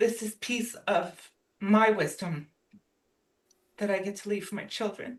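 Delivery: voice catching with emotion. A mother sharing a personal moment about her own mom, choked up. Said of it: "this cheers me up. Sorry".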